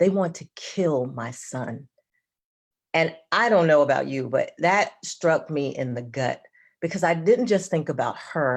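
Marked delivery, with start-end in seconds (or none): 0.0-1.9 mock-pained voice, slower. Quoting a mother watching a video about her son, imitating a pained voice. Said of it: "in this really pained voice".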